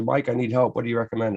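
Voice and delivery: plain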